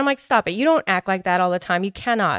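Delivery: ordinary talk, nothing marked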